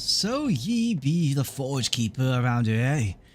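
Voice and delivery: rough, grimy, gravelly prospector voice bursting with enthusiasm. Reading out a grimy prospector's lines in a game event: gravelly grimy prospector voice. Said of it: "the grimy prospector's voice is gravelly".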